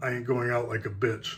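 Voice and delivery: hushed, really quiet, understated delivery. Retelling what a man said after looking at him: really quiet. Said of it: "he says it really quiet".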